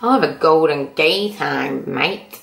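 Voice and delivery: clumsy, bad, put-on Australian bogan accent. Imagining a big burly bogan guy ordering at a corner shop: bad Australian bogan accent. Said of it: "That's the worst accent".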